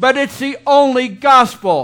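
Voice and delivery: all-out, loud, high-pitched yelling. Speaker stressing a point to listeners, yelling. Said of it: "I'm yelling".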